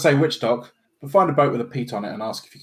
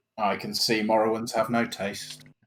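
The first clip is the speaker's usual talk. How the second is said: quiet aside muttered under the breath; 3 semitones lower, 5 dB quieter than usual. Remarking in character on another character's taste: muttered under breath. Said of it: "I think it's probably under my breath".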